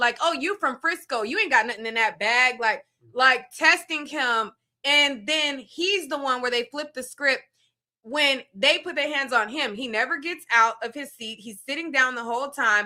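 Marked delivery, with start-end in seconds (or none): 0.2-2.6 put-on mocking tone with laughter. Retelling how the players taunted him while laughing: imitating a mocking taunt. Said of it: "laughing at him".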